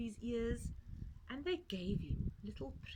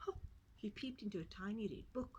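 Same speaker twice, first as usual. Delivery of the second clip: ordinary delivery, nothing marked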